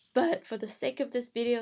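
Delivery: ordinary delivery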